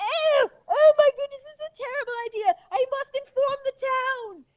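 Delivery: very high, shrill, panicked shrieking scream. Voicing a peasant who sees his friend struck down: peasant screaming in panic. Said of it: "starts screaming".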